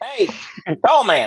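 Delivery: tiny, high, put-on gnome voice. Voicing a little gnome who kicks a player's shin: little gnome voice. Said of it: "This little gnome walks up to you".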